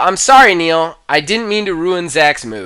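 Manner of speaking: ordinary talk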